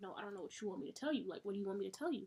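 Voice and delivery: mock sassy, attitude-filled tone. Retelling a reply to mom: imitating own attitude. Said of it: "But I have an attitude".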